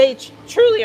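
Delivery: voice cracks very high on "truly". Musing about how those on the other side will react, voice cracks. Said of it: "Voice crack".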